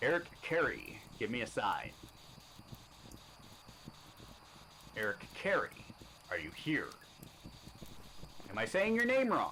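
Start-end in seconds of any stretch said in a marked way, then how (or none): 0.0-6.9 slow, formal, professional tone. Asking someone in the afterlife to give a sign, in a professional voice. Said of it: "Let's do my professional voice here".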